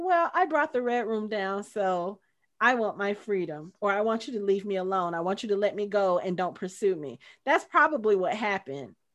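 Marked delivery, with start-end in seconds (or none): none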